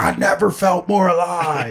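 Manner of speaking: slow, mild, held-back, drawn-out yell. Acting out what to yell after biting someone: pretend yelling. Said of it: "and then you yell".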